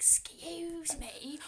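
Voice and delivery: put-on whisper. Retelling how an exam invigilator spoke into their ear: imitating someone whispering. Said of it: "whispers in my ear".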